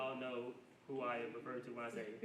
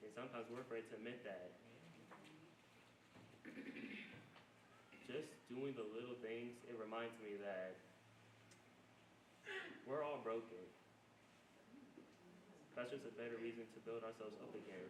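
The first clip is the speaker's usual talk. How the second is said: emotional, choked up, voice breaking, quieter; 8 dB quieter than usual. Talking about failing the next generation, emotional, voice breaking. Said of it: "I'm getting emotional".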